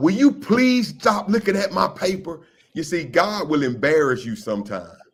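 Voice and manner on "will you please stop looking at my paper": high, acted-out hollering, complaining tone. Retelling what a young lady in class did: imitating Stephanie hollering. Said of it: "she hollered out".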